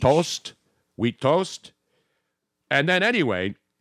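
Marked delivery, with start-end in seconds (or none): 0.0-1.7 imitated Canadian French accent. Imitating how French Canadians order breakfast, in a French Canadian accent. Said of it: "just keep talking like that".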